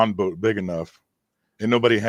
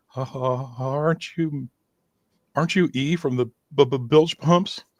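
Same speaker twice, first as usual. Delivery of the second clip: put-on trembling voice, much higher, slower; 5 semitones higher than usual. Retelling a man walking up to him and his girlfriend, imitating a shivery voice. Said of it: "in this very shivery voice".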